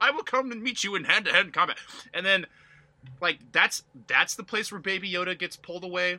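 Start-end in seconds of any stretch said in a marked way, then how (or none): 0.0-1.8 mock gentlemanly tone, higher. Mocking a Stormtrooper in an oddly gentlemanly skirmish: put-on gentlemanly voice. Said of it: "oddly gentlemanly skirmish".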